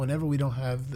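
normal talking voice

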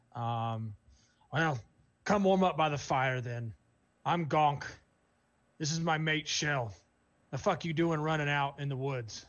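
loud, feminine orc-voiced hollering yell. Voicing an orc woman at a campfire, as a female orc yelling out loud. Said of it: "the female is definitely an orc. / And you hear a feminine voice kind of yell this out loud as she nudges the figure next to her".

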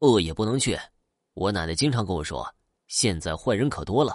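ordinary delivery

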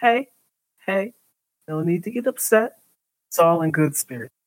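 cocky, smug, easygoing, teasing tone. After someone steps on his foot, a character raises his hands, smirking. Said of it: "is kind of smirking and says".

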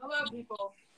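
half-hearted, flat, unenthusiastic monotone. Greeting the audience when asked to say hello: unenthusiastic. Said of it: "That was very unenthusiastic".

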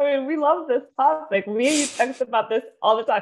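high talk while crying with laughter. Host opening the episode alongside a co-host, crying laughing. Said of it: "I'm crying laughing already".

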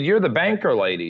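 ordinary delivery

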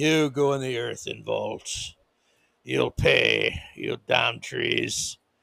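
very low, deep, rough, creaky voice. Mocking a plan to bury trees in earthen vaults: Klaus Schwab impersonation. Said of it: "that's my Klaus Schwab impersonation".

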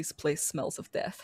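whispered, under-the-breath muttering. Voicing a creature sniffing around a cabin: muttering to herself. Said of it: "she sort of mutters to herself".

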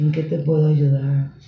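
soft, hushed, serene, overly calm voice. Imitating how the staff talk to you, mimicking soft-spoken staff.

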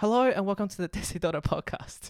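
words broken up by laughter. Opening the podcast after a botched intro: laughing while talking. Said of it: "why I am laughing right now".

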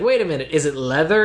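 normal talking voice

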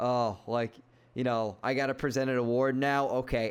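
dry, low, flat deadpan delivery. Mocking a show host handing off to a celebrity, mimicking Jeff Keighley deadpan. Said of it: "he deadpans".

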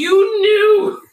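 shrill, high accusing scream at full volume. Retelling watching the show with a friend, imitating own screaming. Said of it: "I'd start screaming".

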